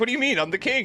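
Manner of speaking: very high, indignant, affronted king voice. Imagining a king asked what he does, imitating an offended king. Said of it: "He's like".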